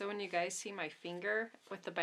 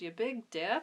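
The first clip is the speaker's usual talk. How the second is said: amused, laughing, teasing jab; 3 dB louder than usual. Retelling what mom says after a clumsy accident: imitating mom laughing at her. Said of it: "she kinda laughs at me and she goes".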